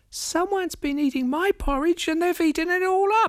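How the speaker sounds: put-on tiny, very high, small baby voice. Narrator reading a bear story voices the baby bear in a baby-sized voice. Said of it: "said in a baby-sized voice".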